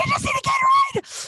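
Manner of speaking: very high, strained, desperate, insistent voice.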